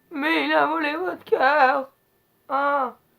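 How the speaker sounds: very loud, very drawn-out, slow, dopey dub voice. Mocking the old french dubbing of a film: imitating a dumb-sounding dub voice. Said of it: "un peu une voix de débile".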